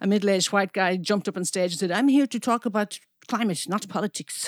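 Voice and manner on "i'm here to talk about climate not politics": imitated Dutch accent. Retelling a man who jumped on stage and took the mic, Dutch accent. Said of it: "it's my best Dutch accent".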